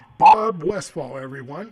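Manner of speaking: very loud, booming yell at full volume. Thanking a guest at the end of a segment: yelling. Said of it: "I don't know why I'm yelling".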